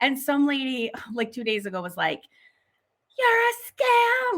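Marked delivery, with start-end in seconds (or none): 3.2-4.4 put-on high slow scream. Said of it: "was, like, screaming at me".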